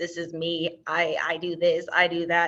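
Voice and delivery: flat, mechanical, monotone robotic delivery. Speaker introducing themself to a group, robot voice. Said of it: "that was my robot voice".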